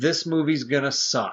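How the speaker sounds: put-on whisper. Retelling leaning into the wife at the movie: retelling a whisper. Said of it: "I whispered in her ear".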